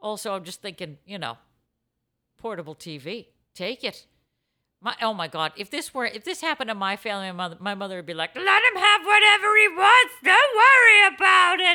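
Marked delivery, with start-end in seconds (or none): 8.3-11.8 put-on squeaky gremlin-like voice, very high and loud. Imitating a mother letting her son have whatever he wants: Muppet-like voice. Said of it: "Why does your mom sound more and more like a Muppet or like a gremlin".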